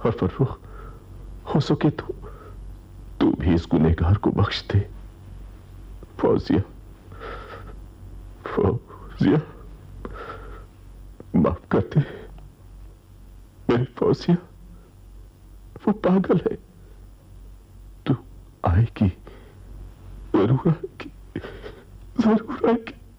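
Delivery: high, delirious raving, tormented madman voice. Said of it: "होश में आओ".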